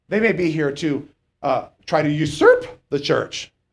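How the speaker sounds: voice cracking partway through. Addressing listeners directly, the speaker keeps talking with a voice cracking. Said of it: "as my voice cracks".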